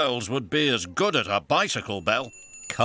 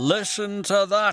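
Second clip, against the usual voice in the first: proud, beaming, pitched-up exclaiming voice; 8 semitones higher, 3 dB louder than usual. Hearing the new cowbell clang, he speaks proudly. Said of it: "chuffed [name] proudly".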